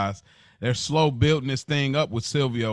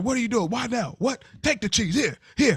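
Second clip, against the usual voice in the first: put-on angry ranting voice, higher pitch; 10 semitones higher than usual. Retelling how Tony starts going off on everybody: imitating Tony going off on everybody. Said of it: "he starts going off on everybody".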